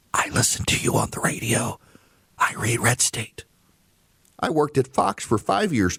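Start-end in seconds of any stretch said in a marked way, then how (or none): 0.1-3.4 hushed whisper under the breath. Retelling what coworkers said in the hallway: imitating a whisper. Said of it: "They would whisper".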